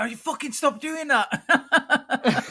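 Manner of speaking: very high, drawn-out, fed-up, annoyed tone. Retelling how the other player got cheesed off during the game: imitating someone cheesed off. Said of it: "you used to get quite cheesed off".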